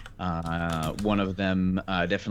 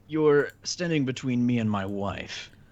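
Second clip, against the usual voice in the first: put-on old man character voice, higher; 5 semitones higher than usual. Voicing an old man who asks a player what he is doing: old man character voice. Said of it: "the old man next to you says".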